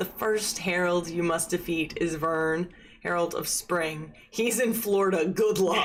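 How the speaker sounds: normal talking voice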